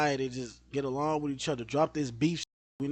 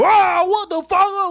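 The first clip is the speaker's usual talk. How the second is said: very high, very loud, drawn-out scream; 15 dB louder than usual. Retelling how Flight used to react on stream: imitating Flight screaming. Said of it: "would scream like".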